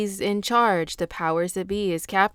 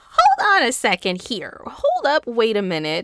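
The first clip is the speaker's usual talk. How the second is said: comic character voice, pitch swinging up and down; 4 semitones higher, 4 dB louder than usual. Everybody scratching their heads at a different perspective, Katt Williams voice. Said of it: "in my Cat Williams voice".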